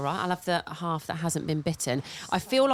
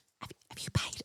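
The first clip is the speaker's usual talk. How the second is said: discreet, very quiet whisper, barely audible. Retelling asking a friend at the garage about paying: retelling own whisper. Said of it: "I whispered".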